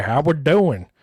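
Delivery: a touch of Texan drawl. Echoing another speaker's greeting, imitating a slight Texas accent. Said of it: "you sound a little Texas right there".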